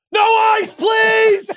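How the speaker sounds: full-on high, shrill, very loud scream. Joking about a red-eye flight, speaker acts out a passenger's mock scream. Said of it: "You could only scream on an airplane".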